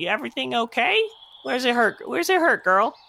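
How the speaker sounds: very high-pitched goblin character voice. Voicing a goblin sheep herder who spots a stray sheep: goblin sheep herder voice. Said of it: "He says".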